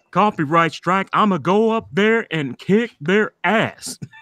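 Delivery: robotic cartoon voice. Showing off voice impressions, doing a Bender from Futurama impression. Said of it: "Bender from Futurama".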